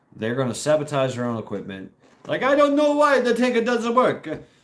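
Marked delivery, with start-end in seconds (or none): 2.3-4.3 put-on very high-pitched Russian accent with an Italian tinge. Voicing low-morale russian soldiers whose tank won't work, russian accent tinged with italian. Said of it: "My Russian accent has Italian".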